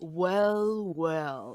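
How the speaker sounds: slow, drawn-out, thuggish snarl on well, well. Narrating a scene, voicing a thug who spits and taunts the approaching group; snarling thug. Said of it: "he snarls".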